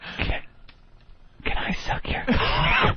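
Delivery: faint, slow, hushed whisper. Retelling what was heard in a dark tree house: imitating a whisper. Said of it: "this whispering that I can't quite make out".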